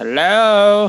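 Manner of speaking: high, loud call directed upward. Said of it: "he'll call out".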